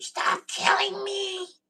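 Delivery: put-on very high, babyish screaming voice. Recalling losing at Twisted Metal: screaming in a baby voice. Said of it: "in a baby voice".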